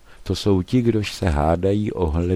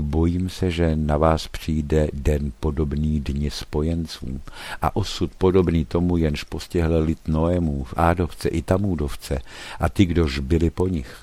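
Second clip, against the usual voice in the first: ordinary talk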